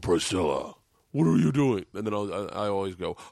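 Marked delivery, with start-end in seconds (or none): 0.0-1.8 voice used with pets. Showing the others the voice used when talking to animals, a pet-talk voice. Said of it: "Mine's like, I'll go".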